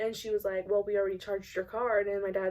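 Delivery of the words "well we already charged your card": irritated, put-out, annoyed tone. Retelling what the rude drive-thru cashier said: imitating an annoyed cashier. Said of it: "she got very annoyed".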